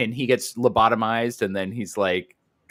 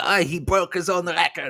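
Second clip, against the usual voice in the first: put-on Yiddish accent, high and slow; 8 semitones higher than usual. Imitating the guy next door in the movie: put-on Yiddish accent. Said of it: "Yiddish accents".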